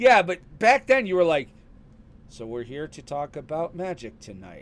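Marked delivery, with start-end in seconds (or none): 2.3-4.6 mock flat monotone, quieter. Teasing the listener about how they used to open back then, imitating a monotone delivery. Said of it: "it was very monotone".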